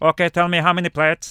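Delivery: loud robot-like monster voice. Retelling a tall chef's instructions in a robotic Frankenstein voice. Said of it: "It was like this".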